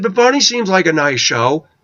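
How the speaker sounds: sarcastic. Retelling what the speaker said to kindergartners, retelling a sarcastic remark. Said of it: "I'm being somewhat sarcastic".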